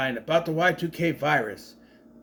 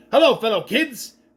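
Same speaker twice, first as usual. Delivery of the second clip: loud, over-eager, in-your-face fake-cool voice; 6 semitones higher, 5 dB louder than usual. Mocking an actor in a movie role: Steve Buscemi "hello fellow kids" voice. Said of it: "Steve Buscemi in your face going".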